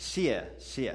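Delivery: sharp fourth tone, steep drop on first "xie". Teaching Mandarin fourth tone in xiexie, sharp falling fourth tone on xie. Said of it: "this is fourth tone. So fourth tone is kind of like a sharp downward movement".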